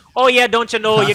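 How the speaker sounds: put-on, very loud, high Midwest accent. Trying out a Midwest accent on a shared phrase, a Fargo accent. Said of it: "That's like that that Fargo accent".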